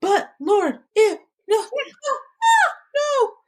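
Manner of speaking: very high, pleading, resisting protest. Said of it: "but I was like".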